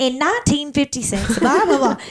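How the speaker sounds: put-on Southern US accent. Recalling theater days, the speaker shows how they all used to sound, in a southern accent. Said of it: "Because we all sounded like".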